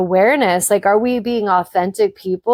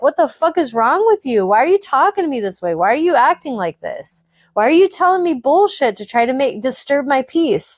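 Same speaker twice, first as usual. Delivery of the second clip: mock-angry, acted-out getting mad; 4 semitones higher than usual. Speaker acts out their reply to a toxic boy; retelling own angry outburst. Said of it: "I get pissed and I'm mad".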